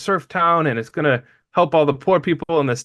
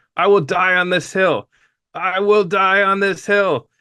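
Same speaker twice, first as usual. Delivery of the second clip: put-on tearful, fervent, impassioned crying outcry; 4 semitones higher than usual. Retelling how a man crying on stage about his plan started screaming: retelling a scream. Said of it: "he starts screaming".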